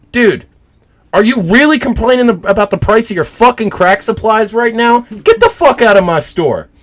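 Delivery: fed-up, angry, very high pissed-off rant. Retelling telling off a customer in a store: retelling own angry words. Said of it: "I was pissed off".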